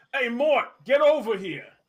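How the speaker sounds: shouting. Voicing a mort calling another mort over: yelling. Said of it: "he yells at a Mort".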